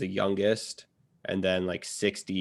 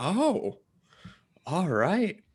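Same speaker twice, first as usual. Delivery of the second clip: raised-pitch put-on voice. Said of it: "I was like".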